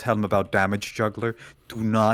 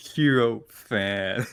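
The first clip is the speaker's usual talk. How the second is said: slow, mock disdainful tone. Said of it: "why did bro say it like that".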